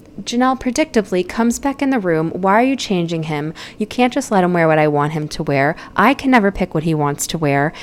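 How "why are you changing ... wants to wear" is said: ordinary delivery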